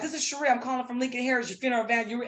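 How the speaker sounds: very fast, rattled-off, run-together speech. Retelling the seventh call to someone who kept hanging up, said really fast. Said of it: "I just said it real fast".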